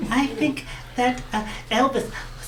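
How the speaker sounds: high, slow, semi-decent put-on English accent.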